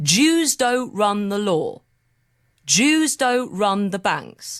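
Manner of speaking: very slow, each word separated and clearly spelled out. Guest answering an interviewer, said very slowly and clearly. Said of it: "I'll say it really slowly".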